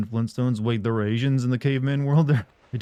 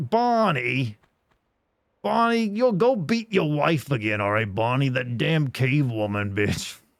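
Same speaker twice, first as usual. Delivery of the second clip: put-on cartoon caveman voice; 2 semitones higher than usual. Mimicking a Flintstones character while talking about the show: Flintstones voice. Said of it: "It's like".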